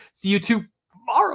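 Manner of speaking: odd, weird pause splitting the phrase. Showing how Jerry gets a huge laugh on a line, weird mid-line pause. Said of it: "do this weird pause in the middle".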